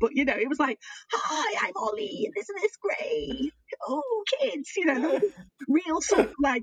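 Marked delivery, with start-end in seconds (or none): 1.1-4.7 put-on desperate, awful kids' presenter voice, high and swooping. Retelling own teaching like a children's theatre group: imitating a desperate kids' theatre performer. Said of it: "it made me think of the awful Lex Akimbo".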